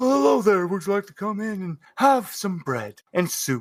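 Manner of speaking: kind, warm, smiling friar voice. Narrating a scene, voicing a cult member who greets the listener, kindly friar voice. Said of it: "they kindly".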